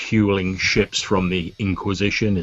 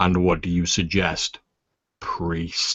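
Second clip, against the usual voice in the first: low, deep, rumbling character voice. Narrating a role-play, the speaker voices a being questioning the priest: deep rumbling voice. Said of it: "in a deep rumbling voice".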